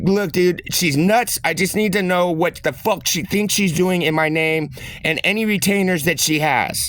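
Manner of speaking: usual speaking voice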